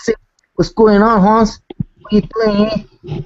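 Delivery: overdone Spanish accent.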